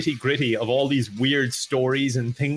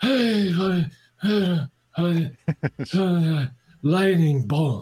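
very slow mumble, words blurred together; 4 semitones higher than usual. Mocking an energy drink ad: mumbled Steven Seagal impression. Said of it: "if it was a good impression, no one would understand what he's saying".

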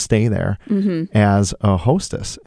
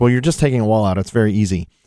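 plain

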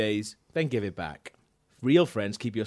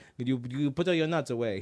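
put-on very heavy, thick Greek accent; 4 dB quieter than usual. Retelling what the groom's dad said at the wedding, in a thick Greek accent. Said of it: "In this really thick Greek accent".

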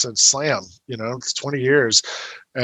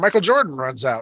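ordinary delivery

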